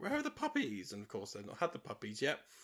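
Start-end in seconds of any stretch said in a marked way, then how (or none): 0.0-0.9 very high, classic evil, wicked voice. Describing a film villain, the speaker quotes her in a Cruella de Vil evil voice. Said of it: "classic evil voice. She's like".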